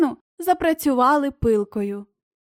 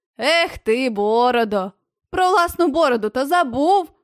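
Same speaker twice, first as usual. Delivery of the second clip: teasing, scornful, mocking, jeering. One man teases his bearded companion who wished for a rope, mocking. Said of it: "насмішкувато повторив Фарамант".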